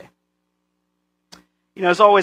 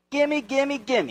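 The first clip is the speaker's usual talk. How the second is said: put-on high, hushed greedy child voice. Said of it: "just like little kids".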